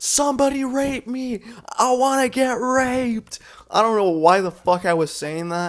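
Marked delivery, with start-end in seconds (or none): 0.0-3.4 wild, high-pitched, drawn-out screaming. A speaker recalls riding the Velocicoaster with friends, retelling their own screaming. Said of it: "but I literally was screaming".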